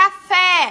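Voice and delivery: very loud, high-pitched shouted word. Teaching word stress, showing how to say a word aloud: shouted 'Café'. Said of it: "falo uma palavra alto?".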